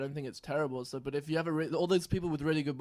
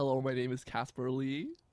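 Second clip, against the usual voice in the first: put-on American accent. Practicing accents on a self-introduction line: put-on american accent. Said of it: "That's better".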